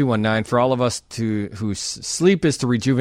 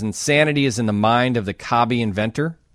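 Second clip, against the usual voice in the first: plain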